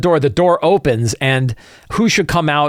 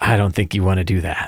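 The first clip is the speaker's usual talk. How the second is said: very low, deep, menacing, sinister voice; 8 semitones lower, 4 dB quieter than usual. Retelling how a man warned the people trying to stop him, retelling a sinister threat.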